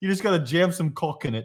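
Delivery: put-on Australian accent. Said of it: "He's Australian or something".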